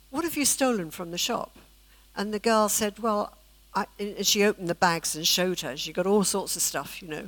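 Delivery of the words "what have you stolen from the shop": play-acted kind tone, full of love. Retelling how a woman questioned a girl about a shop, retelling a kind, loving question. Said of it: "she said it really kindly with love".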